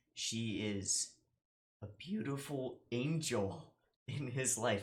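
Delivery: tearful, choked-up voice catching, halting with breaks. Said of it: "I'm tearing up again".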